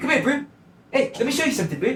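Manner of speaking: very high pitch, accent landing in New Zealand. Imitating a man's South African accent from a show: New Zealand-sounding accent. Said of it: "Now you sound like you're from New Zealand".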